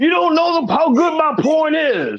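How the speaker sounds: mock very high-pitched yell. Recounting advice given to husbands, the speaker acts out one guy, imitating a man yelling out. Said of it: "and the guy yells out".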